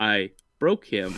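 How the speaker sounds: acted sorrowful, downcast, mournful delivery. Quoting a character from the episode: imitating saying it sadly. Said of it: "so sadly looks at this pencil".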